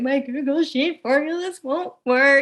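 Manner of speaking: mock tearful distress. Retelling calling a friend at night for help with formulas: mock crying. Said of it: "the guy I call in the middle of the night crying, going".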